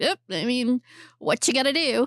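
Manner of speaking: casual, smug, dismissive tone. Retelling a film scene, imitating the boyfriend: imitating a smug boyfriend. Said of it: "I know I sound like I'm being smug".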